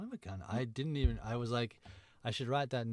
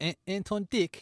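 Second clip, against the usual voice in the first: New Zealand accent, much higher pitch; 8 semitones higher, 6 dB louder than usual. Asked to say the name in a kiwi accent: kiwi accent. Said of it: "Can you say that with a, a, a Kiwi accent?".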